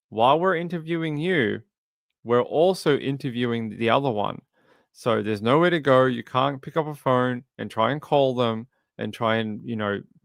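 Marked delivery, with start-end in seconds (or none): none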